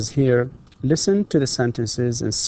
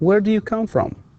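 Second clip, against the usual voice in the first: voice drops away, falling tone on "from"; 9 semitones higher than usual. Demonstrating a where-question's intonation: falling intonation on from. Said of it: "here it is falling".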